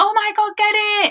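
high-pitched, panicked screaming shriek. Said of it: "I would be screaming and shouting".

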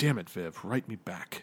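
muttered, mumbled under breath. Voicing a man walking past who talks to himself: mumbling to himself. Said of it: "you hear him mumble".

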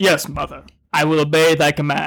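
metallic filtered villain voice. Imagining someone answering their mother like Darth Vader to the Emperor, Darth Vader voice. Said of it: "sounded like you had like a filter over your voice".

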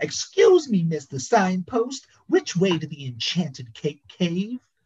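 loud, very high-pitched voice. Reading a story aloud, voicing Harry asking a signpost the way: speaking loudly. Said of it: "speaking loudly".

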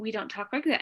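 ordinary talk, nothing marked

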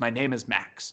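softly spoken. Retelling a movie character's line to a woman, said very quietly. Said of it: "he just simply says very quietly".

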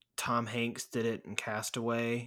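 usual speaking voice

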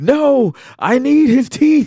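piercing, shrill, very high scream. Recounting a man watching rats drag off a body, retelling a scream. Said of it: "he's like screaming".

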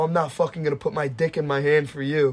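ordinary talk, nothing marked

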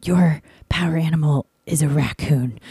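put-on whisper. Retelling what a woman whispered into the speaker's ear, imitating someone whispering. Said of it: "she whispers into my ear".

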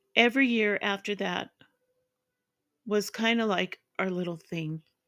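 tearful voice, choking back emotion, near tears. Speaker reads a personal story aloud: choked up. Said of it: "That brought me to tears".

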